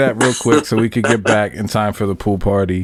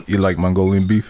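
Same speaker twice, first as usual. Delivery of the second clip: normal talking voice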